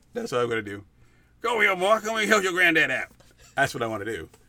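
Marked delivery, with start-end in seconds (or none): 1.4-3.0 put-on old bluesman voice, raised and pitched up. Asked to do it again, the speaker shows how they talk: old blues man voice. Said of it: "I talk like an old blues man".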